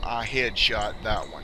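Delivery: plain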